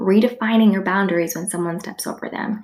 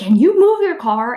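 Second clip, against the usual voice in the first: acted rude, nasty yell; 4 semitones higher, 4 dB louder than usual. Retelling how a woman banged on the door and woke the speaker, imitating a nasty yell. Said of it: "in a really nasty way, like yelling at me".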